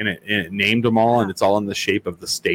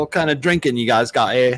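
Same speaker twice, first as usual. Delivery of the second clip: mock English accent, higher pitch; 4 semitones higher than usual. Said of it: "He's all".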